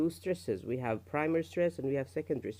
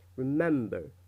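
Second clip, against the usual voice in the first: remember with stress on second syllable mem; 4 dB louder than usual. Teaching word stress, reading the word remember: stress on second syllable of remember. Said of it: "It's on the second syllable ... you read it like this".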